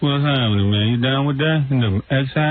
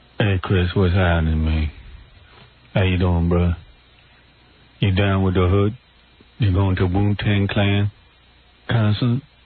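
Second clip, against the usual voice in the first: deliberately low and slow put-on voice; 7 semitones lower than usual. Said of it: "I'm going to talk real low and slow".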